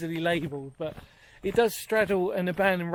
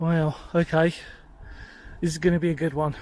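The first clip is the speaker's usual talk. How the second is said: out of breath, catching breath. Arriving at an abandoned railway culvert while filming: out of breath. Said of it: "let me catch my breath".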